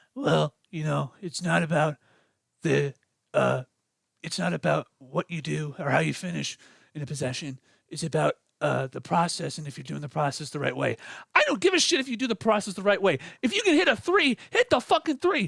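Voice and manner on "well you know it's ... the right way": very low, rough, gravelly voice. Quoting a coach's words before game two: J B Bickerstaff gravelly voice. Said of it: "let me get my J B Bickerstaff gravelly voice".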